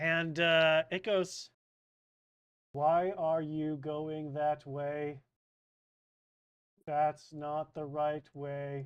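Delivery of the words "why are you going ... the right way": very monotone, flat, level, no lift anywhere. Quoting what something said to them, in a flat monotone. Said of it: "Yes, very monotoned".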